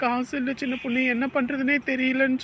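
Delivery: ordinary delivery, nothing marked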